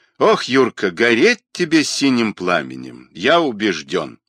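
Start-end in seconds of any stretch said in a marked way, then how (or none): none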